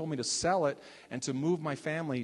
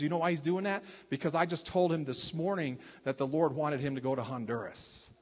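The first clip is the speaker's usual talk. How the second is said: plain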